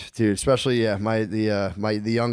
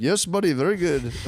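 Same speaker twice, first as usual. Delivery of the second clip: put-on Indian accent, pitched up; 8 semitones higher than usual. Joking about an outsourced remote worker on a call: put-on indian accent. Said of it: "you're talking to four Indian guys at once".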